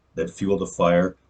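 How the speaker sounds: ordinary talk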